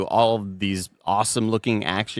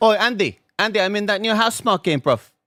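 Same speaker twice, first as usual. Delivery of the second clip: very high, fake, bad British accent; 12 semitones higher, 4 dB louder than usual. Quoting what everybody says to Andy, in a put-on accent. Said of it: "what accent is that?".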